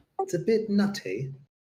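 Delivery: very high-pitched put-on British accent. Joking about Bitcoin with others, the speaker riffs: put-on British accent. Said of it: "That's a really that's a really good British accent".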